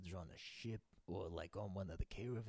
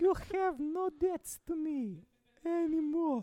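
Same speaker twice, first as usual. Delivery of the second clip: very high, shrill, very loud put-on voice; 13 dB louder than usual. Asked to say a sentence in a friend's voice; imitating his high-pitched voice. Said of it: "just say a sentence like in his voice".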